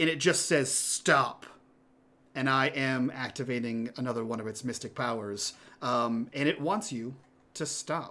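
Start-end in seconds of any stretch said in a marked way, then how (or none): 0.7-1.5 angry yet pleading, half angry, half begging. Voicing a creature's voice inside a player's head: half angry, half pleading. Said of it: "half angry, half pleading".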